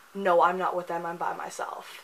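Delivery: put-on flat delivery. Retelling what a girl said to a guard, imitating a deadpan reply. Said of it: "deadpan expression on her face, and goes".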